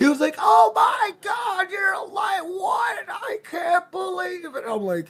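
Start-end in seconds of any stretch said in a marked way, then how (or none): 0.4-4.6 shrill, very high, long, drawn-out scream. Retelling how a rando reacted on picking up the blueprint: imitating someone screaming. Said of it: "you heard him scream".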